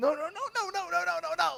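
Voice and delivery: high, desperate, panicked yelling. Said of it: "he's just yelling".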